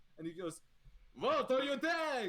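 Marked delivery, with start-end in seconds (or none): 1.2-2.3 put-on higher-pitched, wavering, inconsistent French or Dutch accent. Voicing the head chef being carried out: wavering french or dutch accent. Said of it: "his accent, it still changes".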